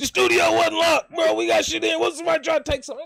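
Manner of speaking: put-on very loud, shrill, high, cranky grumpy rant. Retelling how he reacts at home as a roommate: imitating his own grumpy self. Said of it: "I just be tripping".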